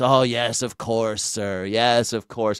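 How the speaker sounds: fawning, obsequious, fully deferential servant-like voice. Retelling how Long John Silver poses as a cook: obsequious Long John Silver voice. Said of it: "he talks really obsequious".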